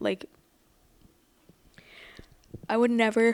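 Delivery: speaking through a yawn. Discussing a show about trusting friends, speaking while yawning. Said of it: "I don't know why I'm yawning right now".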